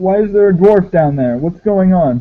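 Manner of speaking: mildly angry, accusing, demanding tone. Narrator voicing a guy yelling at the listener, guy yelling. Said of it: "the guy's yelling at you".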